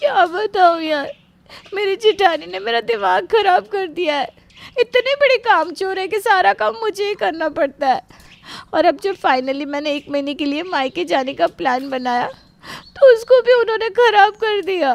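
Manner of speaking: high, tearful complaining tone. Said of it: "तू रो रही है क्या?".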